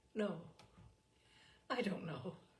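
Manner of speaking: weary, worn-out, tired, soft delivery. In a drama scene, replying to the other speaker, tired. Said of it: "You sound tired".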